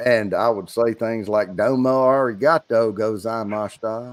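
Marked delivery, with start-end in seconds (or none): 1.6-4.1 put-on Japanese spoken in a thick, heavy Southern accent. Retelling speaking japanese phrases while drunk, in a thick southern accent. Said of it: "my southern accent would come out real thick".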